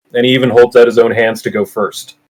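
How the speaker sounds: plain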